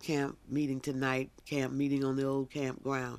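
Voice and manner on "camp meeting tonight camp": usual speaking voice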